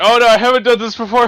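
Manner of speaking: alarmed character voice. Acting out a character grabbing an item that starts absorbing: voicing Rispert, alarmed. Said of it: "Rispert's like".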